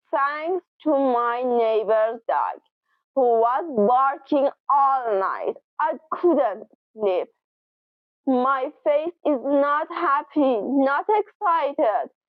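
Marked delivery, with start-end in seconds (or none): 0.1-7.2 a little sarcastic, low tone. Demonstrating how an expression is used about a barking dog, sarcastic tone. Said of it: "with a little bit of a sarcastic tone".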